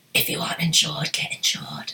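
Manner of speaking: eerie, menacing, creepy whisper. Discussing gear stolen at wedding shoots, the host says this in a creepy voice. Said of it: "That was a very creepy voice".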